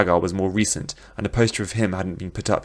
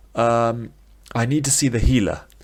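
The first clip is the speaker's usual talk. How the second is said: plain reading voice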